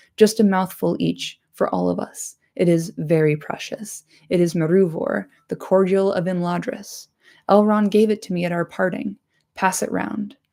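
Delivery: ordinary delivery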